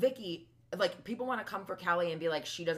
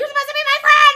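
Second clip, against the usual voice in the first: put-on screeching voice, higher and louder; 21 dB louder than usual. Retelling lines the editors cut to: imitating Vicky screeching. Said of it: "all of the time she screeched like that".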